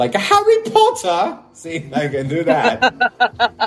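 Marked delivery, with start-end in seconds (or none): 0.1-1.4 very high put-on British accent, wizard voice. Showing a British accent that works only in wizard voice: high put-on British wizard accent. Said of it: "My British accent's only good when I'm doing a wizard voice".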